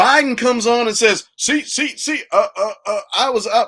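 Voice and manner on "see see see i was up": stumbling and hesitating, then delivered cleanly. Retelling what a speaker said when he came on: Biden impression. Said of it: "that sounds like my Barack Obama impersonation".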